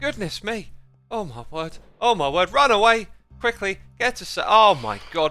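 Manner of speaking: trembling with fright. Fleeing phantoms chasing the player in a game: trembling with fright. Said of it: "I'm trembling!".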